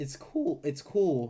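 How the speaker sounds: cracking voice. Speaker giving an opinion to viewers, voice cracking. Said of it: "Sorry, voice crack".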